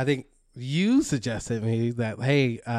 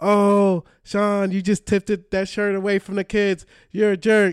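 shrill, raised, hollered yell; 8 semitones higher, 5 dB louder than usual. Retelling a moment at an arena game, retelling Sam yelling. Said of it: "starts yelling".

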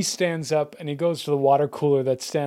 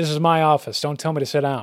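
ordinary talk

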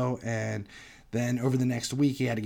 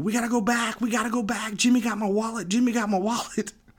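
mock, piercing, very high, shrill, frantic screaming; 10 semitones higher than usual. Telling how a man left his wallet at the table, imitating Steve screaming. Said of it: "he's all screaming".

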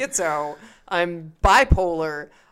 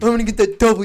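dopey, stupid-sounding delivery; 4 semitones higher, 4 dB louder than usual. Showing how a stupid person would say a phrase: stupid-person voice. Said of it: "you have to say it like a stupid person".

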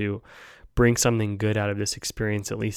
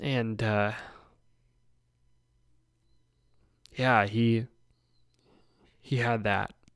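getting emotional, choked up. A podcast host, telling a personal story, gets emotional, choked up. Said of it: "I'm sorry to get so emotional".

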